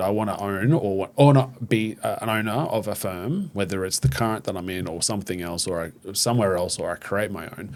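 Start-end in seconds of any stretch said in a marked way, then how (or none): none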